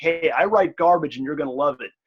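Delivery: put-on sardonic, self-deprecating tone. Acting out own pitch to a reader: imitating own sardonic pitch. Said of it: "you can tell I'm being sardonic".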